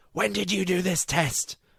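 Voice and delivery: mock very high, panic-stricken cry. Retelling how mum shouted on finding the test: imitating mum's panicked shout. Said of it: "sheer panic in her voice".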